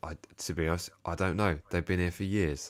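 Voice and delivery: ordinary delivery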